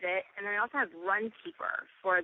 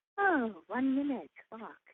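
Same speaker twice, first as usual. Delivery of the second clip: slightly higher, calm, soothing guide voice. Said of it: "calm, soothing voice saying".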